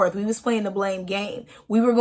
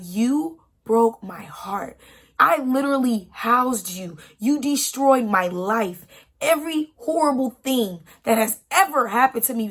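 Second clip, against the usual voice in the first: mock emotional outburst, losing control, pouring everything out; 2 semitones higher than usual. Retelling own words while losing it, imitating own past outburst. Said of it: "losing it".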